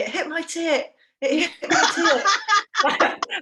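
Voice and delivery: very slow, high-pitched, drawn-out scream. Retelling how a teammate screamed at the referee: imitating a scream at the referee. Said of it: "she just screamed at the referee".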